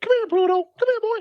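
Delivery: very high little cartoon mouse voice. Explaining a knack from talking to the kids, Mickey Mouse voice. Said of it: "having to go".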